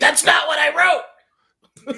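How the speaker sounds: put-on very high, very slow, shrill, drawn-out screaming. Joking about a new TV adaptation, imitating Anne Rice screaming. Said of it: "Anne Rice sitting there screaming at him like".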